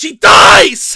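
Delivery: very loud, booming, high drawn-out yell. Discussing a movie's plot with another speaker: yelling. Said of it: "I don't know why I yelled so much".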